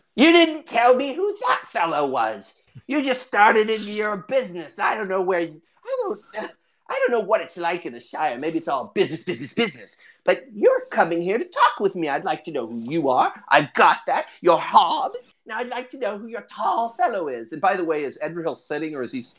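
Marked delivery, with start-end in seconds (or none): 0.2-17.5 put-on high, swooping old woman character voice. Voicing an old woman who asks who the tall fellow is: old woman NPC voice. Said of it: "She's like".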